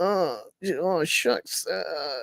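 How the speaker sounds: faltering, defeated stammer. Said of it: "this character's like".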